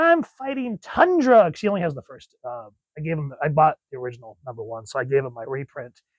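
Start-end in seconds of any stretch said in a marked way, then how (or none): 0.0-1.5 put-on high, slow kid voice. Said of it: "he'll run around saying".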